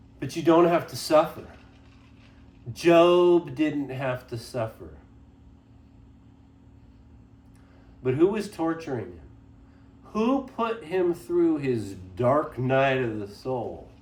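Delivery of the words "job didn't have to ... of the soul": mocking, sarcastic tone with one word drawn out. Making a point about suffering, sarcastic. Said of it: "I know I'm being sarcastic".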